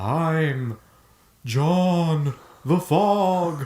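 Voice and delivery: eerie, spooky voice, high and very slow. Introducing yourself after others ask for a spooky voice: spooky voice. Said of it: "Everyone's gotta say it in a spooky voice".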